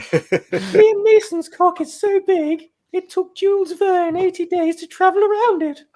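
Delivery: best put-on mock feminine voice. In a voice-swap game, a player reads the phrase in their best feminine voice. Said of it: "in your best feminine voice".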